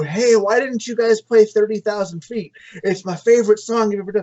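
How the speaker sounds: mock drunken slurred speech. Retelling talking to a band backstage while drunk, mock drunk slurring. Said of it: "so I'm slurring through".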